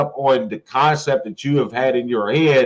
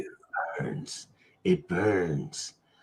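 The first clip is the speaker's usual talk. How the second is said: put-on smoker lady voice, lower and quieter; 7 semitones lower, 13 dB quieter than usual. Joking along after pretend shots: like the smoking lady from Beetlejuice. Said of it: "You sound like the lady off of Beetlejuice".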